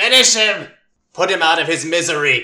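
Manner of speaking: commanding, high-pitched shout, projected far. Voicing a character calling out to Imogen in battle: shouting. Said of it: "She shouts to you".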